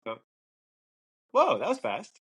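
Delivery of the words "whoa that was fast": very high, startled, caught-off-guard surprise. Imagining his wife back early from the supermarket, he reacts, acting surprised. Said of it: "So that was fast was a little bit surprised".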